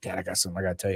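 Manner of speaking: play-acted, excited, all worked-up voice. Retelling what the son said when he came home: imitating excited son. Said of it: "he's all excited".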